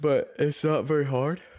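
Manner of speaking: words stretched through a yawn. Speaker addressing an audience, apologizes for yawning while talking. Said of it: "Sorry, I'm yawning".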